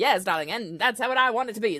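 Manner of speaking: put-on old-Hollywood transatlantic accent, rattled off fast. Imitating fast-talking actors from old films: transatlantic accent. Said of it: "those fast-talking actors that were just like".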